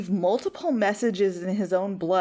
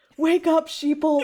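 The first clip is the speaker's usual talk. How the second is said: mock high, screaming rant; 9 semitones higher, 4 dB louder than usual. Imitating Ian McKellen screaming into a void: imitating Ian McKellen screaming. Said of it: "constantly screaming into a void".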